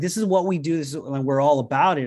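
ordinary talk

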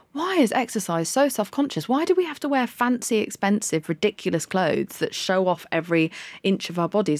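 ordinary talk

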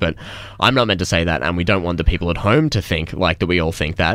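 ordinary talk

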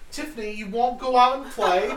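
high-pitched, loud squeal. In a role-play scene, a player calls out to a friend in a Peppa Pig voice. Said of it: "Peppa Pig voice".

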